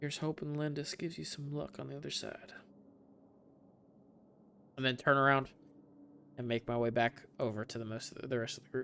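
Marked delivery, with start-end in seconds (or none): 0.0-2.5 whispered under breath, much quieter. A player speaks in character after taking the rock: whispering under breath. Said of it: "under my breath, um, just whisper".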